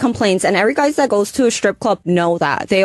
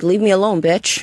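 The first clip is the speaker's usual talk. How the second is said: plain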